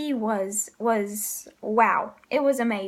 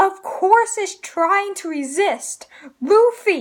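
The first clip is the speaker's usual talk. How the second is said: loud, rising, exasperated yell. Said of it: "but she's just yelling".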